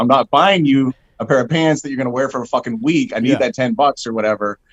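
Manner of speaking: ordinary talk, nothing marked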